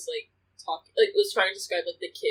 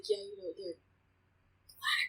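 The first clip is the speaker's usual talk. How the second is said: slow, hushed, half-whispered stage whisper aside; 3 semitones higher, 9 dB quieter than usual. Retelling how a teacher's husband described the kids: imitating someone half-whispering. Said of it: "he whispers it".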